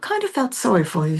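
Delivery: lightly done, put-on British-sounding accent. Quoting a man who took a chance on the speaker, put-on British accent. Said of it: "he sounded more British actually than Australian".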